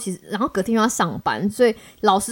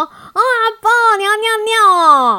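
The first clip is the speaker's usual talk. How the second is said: voice turned gentle, soft and tender; 11 semitones higher, 6 dB louder than usual. Retelling sitting up at night and speaking: imitating own softened voice. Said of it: "马上声音变柔软".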